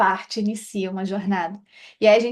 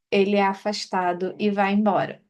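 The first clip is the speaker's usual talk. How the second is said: ordinary delivery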